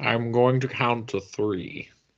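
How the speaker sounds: put-on villain accent, German-Scottish blend. The Doc on the show, continuing a Hans Gruber impression, Connery-tinged. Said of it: "sounds like Hans Gruber if he was doing a Sean Connery impression".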